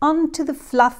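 ordinary delivery, nothing marked

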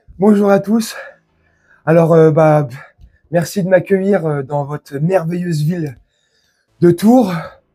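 somewhat breathless, slightly winded, a little out of breath. Performer greets the audience in Tours, a little out of breath. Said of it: "je suis un petit peu essoufflé".

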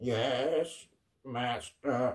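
soft, grating, harsh, squawky mechanical robot voice. A narrator reads a robot greeting its master, in a harsh, squawking voice. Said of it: "in a harsh, squawking voice like that of a medieval phonograph".

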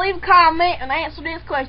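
fake, put-on rural country accent. Asking viewers to leave a comment, in a put-on country accent. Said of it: "In my country accent".

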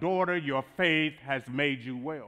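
ordinary delivery

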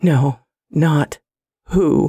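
genuinely frightened, fearful voice. The subject answers the narrator's question, with genuine fear in its voice. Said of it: "the subject said with genuine fear in its voice".

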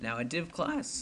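voice cracking. Explaining web page code, voice cracking. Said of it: "voice crack fail".

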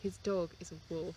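soft, dry, expressionless deadpan. Praising a show's line deliveries, imitating Tina's deadpan. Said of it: "like the deadpan".

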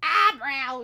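full-volume, very loud terrified scream. Puzzling over where eyebrows go, blurting the word: screamed like being murdered. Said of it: "Said it like I was being murdered".

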